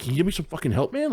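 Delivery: mock begging, high-pitched and rushed. Retelling a guy complaining about a flyer misprint: imitating someone begging for help. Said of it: "he's like really begging for help".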